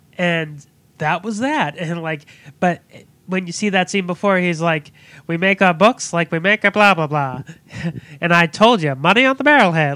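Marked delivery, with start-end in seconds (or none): 5.3-10.0 put-on old-timey 1940s newsreel announcer voice. Retelling a front desk guy's line from a film: old 1940s newsreel voice. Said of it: "he's talking like an old nineteen forties, like, like, newsreel ghost".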